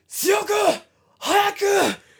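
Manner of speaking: mock, shrill, very high, loud screaming. Retelling a training session where the teacher screams at a guy: retelling a teacher's scream. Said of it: "Teacher just screams".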